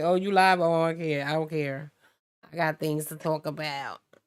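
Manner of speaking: imitated child voice, dismissive tone. Retelling how kids interrupt during a live: imitating a dismissive kid. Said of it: "They be like".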